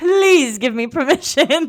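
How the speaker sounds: overdone fake pleading. Imitating a character's note asking permission: imitating fake pleading. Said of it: "so fake".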